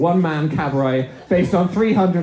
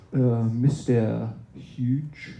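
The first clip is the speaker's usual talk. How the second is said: put-on low, soft, sultry French accent; 4 semitones lower, 6 dB quieter than usual. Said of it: "in a sultry French accent".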